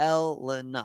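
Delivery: Elena with stress on first and third syllables. Working out how to pronounce a name: stress on first and third syllables of Elena. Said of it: "I think it's first and third syllables accented, not the second syllable".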